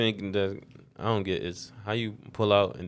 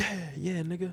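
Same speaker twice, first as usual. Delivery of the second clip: put-on whooping celebration, very high; 10 semitones higher than usual. Retelling how a concertgoer reacted after throwing something: imitating someone cheering. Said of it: "he was cheering after".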